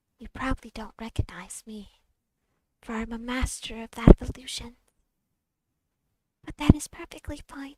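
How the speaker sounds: small quiet raspy voice. A saddle Arabian tells the party she remembers them, small, hushed, raspy voice. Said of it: "one saddle Arabian, tall and slender, / one saddle Arabian, tall and slender, and one small robed, how do I put this? Petite diamond dog with large eyes step forward. The tall just saddle imagining. A".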